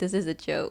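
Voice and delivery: ordinary talk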